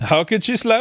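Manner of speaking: put-on Indian accent. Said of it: "Anytime we do those accents".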